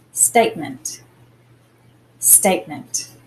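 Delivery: STATE stressed, ment dropped low. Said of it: "We actually accent the state bit".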